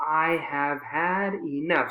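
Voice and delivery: slow and angry, each word hammered hard. Like a parent to a misbehaving young kid, angry, stressing every word. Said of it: "stressing all of those words".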